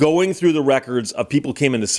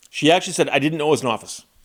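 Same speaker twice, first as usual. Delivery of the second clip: plain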